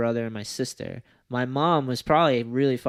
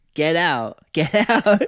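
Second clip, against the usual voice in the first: frantic, high-pitched, loud, drawn-out panicked yell; 5 semitones higher, 7 dB louder than usual. Retelling running through the living room as a kid: imitating a panicked yell. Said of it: "ran through the living room yelling".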